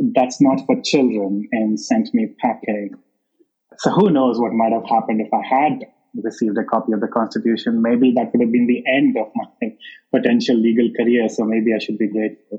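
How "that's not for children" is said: plain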